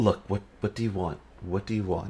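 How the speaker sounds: speaking in a soft, hushed tone. A game master voices a man petting his spined devil, in a hushed tone. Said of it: "He's speaking in a hushed tone now".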